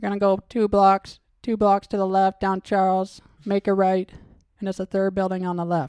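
loud put-on parrot voice. Joking about a parrot dealing with people, giving directions in a parrot impression. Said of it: "That's my impression of a parrot".

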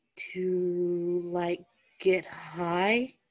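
confused, puzzled, bewildered. Reading a story, one character asks back after being asked about drugs: confused. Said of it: "Stiles asked, confused".

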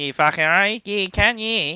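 rough, very broken Australian accent. Trying out accents in conversation, broken australian accent. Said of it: "That's my Cairns accent".

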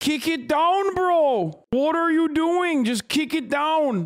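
pushed, very high, fake Canadian accent. Repeating a protester's words from a video: fake canadian accent. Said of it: "my fake Canuck, my, my Canuck accent".

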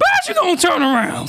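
cracking voice. Ranting to listeners, voice cracking. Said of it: "Sorry for the voice crack".

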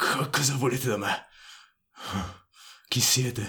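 stumbling growl cracked and broken with pain. A man who has just been struck asks his attackers who they are, in a low, growling, pain-broken voice. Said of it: "con la voce bassa, ringhiante, e rotta dal dolore".

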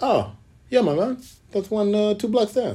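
put-on Samoan accent. Retelling what the front desk guy said about a bar, in a fake Samoan accent. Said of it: "Forgive me for my Samoan accent".

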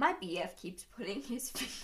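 laughing and giggling through the words. Starting to read a Reddit advice post aloud, laughing while talking. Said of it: "You gotta say it without laughing".

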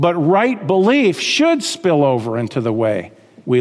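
should stressed with a wide pitch swing.

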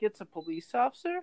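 ordinary talk

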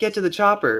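put-on lifeless, flat, half-hearted, very high delivery. Mocking how a movie character said a famous line: imitating a flat, half-hearted line delivery. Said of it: "he's not even trying to be like Arnold Schwarzenegger".

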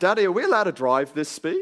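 put-on small voice of a ten-year-old boy, sing-song. Retelling a question from a ten-year-old boy in the car: imitating a ten-year-old boy. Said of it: "I heard this little voice".

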